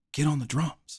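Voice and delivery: close, hushed half-whisper, slightly high-pitched. Retelling how his father called him up during church: imitating father half-whispering. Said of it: "he whispers, whispers in my ear and he goes".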